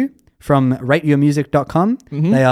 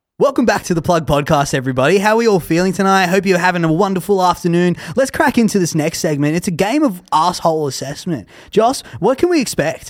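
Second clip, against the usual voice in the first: radio DJ presenter voice; 3 semitones higher than usual. Speaker puts on a voice to open the podcast segment, Triple J radio voice. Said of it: "I'm going to put on a Triple J voice".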